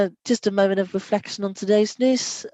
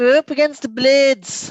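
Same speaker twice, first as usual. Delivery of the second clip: bad, pitched-up, put-on South Yorkshire accent; 5 semitones higher, 4 dB louder than usual. Naming the next opponent, played in Sheffield: rubbish South Yorkshire accent. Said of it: "trying to do a rubbish South Yorkshire accent there".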